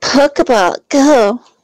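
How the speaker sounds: very high put-on feminine voice. Throwing a Pokeball at a Butterfree in a game, put-on feminine voice. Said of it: "In a feminine voice".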